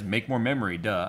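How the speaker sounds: normal talking voice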